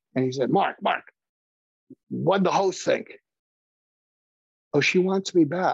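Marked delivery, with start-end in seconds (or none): 0.5-3.1 put-on New York accent. Quoting a man asking the speaker what the host thought, in a New York accent. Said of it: "he had this New York accent".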